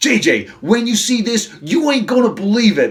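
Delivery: put-on Brooklyn accent. Retelling a story, acting out one character urging another to come see something unbelievable, in a put-on Brooklyn accent. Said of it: "I'm going Taz again with my Brooklyn accent".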